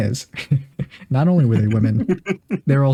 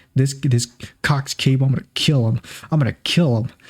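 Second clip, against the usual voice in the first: put-on angry, ranting voice. Retelling how a pissed-off father reacted: imitating angry father. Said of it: "my father's pissed".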